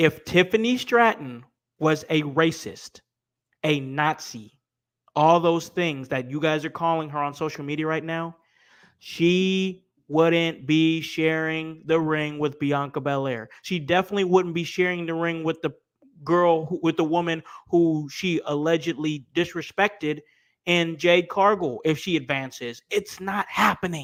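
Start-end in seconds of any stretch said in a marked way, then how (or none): 0.0-13.5 slow, deliberate speech with long pauses. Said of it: "I'm going to say that again".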